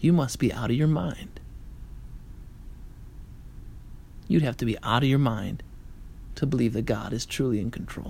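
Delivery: hushed devilish stage whisper. Preaching to a congregation, voicing the devil, half-whispering as the devil. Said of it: "The devil whispers".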